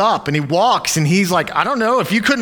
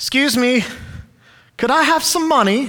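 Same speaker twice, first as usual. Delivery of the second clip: put-on British accent, voice raised in pitch; 7 semitones higher than usual. Retelling a Bible story, voicing a begging lame man: British accent. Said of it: "They always do British accents".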